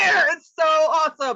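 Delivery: thrilled, high, loud cheering shout.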